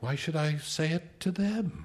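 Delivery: mild, distant, detached voice. She answers his outburst about their children in a mild and distant voice. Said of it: "she said in that same mild and distant voice".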